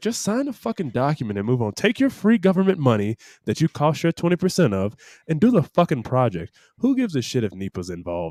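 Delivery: ordinary talk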